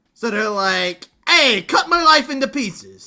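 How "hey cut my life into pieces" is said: put-on edgy New York accent, higher pitch. Describing a character's voice, then imitating it: Falco Lombardi New York accent. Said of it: "Lombardi has that New York accent".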